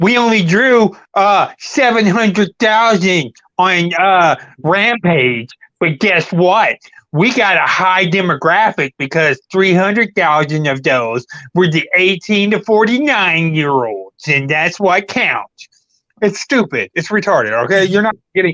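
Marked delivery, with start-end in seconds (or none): 0.0-15.7 slow, derisive, belittling, mocking small voice. Imitating a guy whose argument is being ridiculed: mocking imitation in his little voice. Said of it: "I'm gonna say it in his little fucking".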